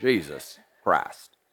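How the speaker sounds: very low, slow, drawn-out East Tennessee drawl. Showing how a name is said in east tennessee: slow, deep east tennessee pronunciation. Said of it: "in East Tennessee, ... Just gotta get it real slow there. Just gotta deep voice it there".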